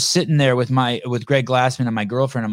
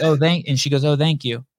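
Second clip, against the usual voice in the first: ordinary delivery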